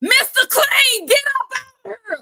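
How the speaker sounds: very high, blaring, megaphone-loud shout. Retelling how a friend called someone out: retelling a megaphone-loud shout. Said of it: "in her loudest voice, like she had a megaphone".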